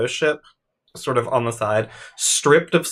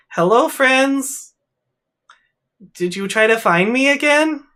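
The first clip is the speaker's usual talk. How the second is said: very high put-on toy voice, pitch pushed way up; 13 semitones higher, 3 dB louder than usual. Blue rabbit eyes light up and the trampoline stops, then you hear: Bonnie trying a new voice. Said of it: "Bonnie is trying a new voice out".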